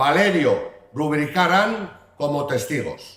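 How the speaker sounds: southern Spanish Andalusian accent. Mayor finishing his public reading of the Brañosera charter, with an Andalusian accent. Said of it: "escuchar el fuero de Brañosera con acento andaluz".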